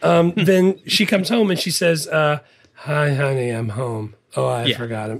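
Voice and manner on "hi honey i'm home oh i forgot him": zombie voice, much lower pitch. Retelling a superhero character coming home and greeting her husband, in a zombie voice. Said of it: "she says it like a zombie".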